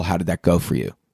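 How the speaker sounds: low, deep put-on voice. Quoting a man who stopped him to ask something, in a deep voice. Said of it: "kind of a deep voice".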